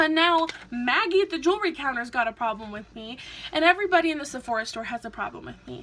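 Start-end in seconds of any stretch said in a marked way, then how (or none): none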